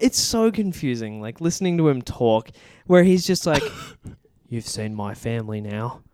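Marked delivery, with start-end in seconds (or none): 4.5-6.0 very hushed Australian voice, slight lisp. Describing how confusing it is listening to him talk, in a soft, lispy Australian voice. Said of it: "a soft Australian voice with a slight lisp".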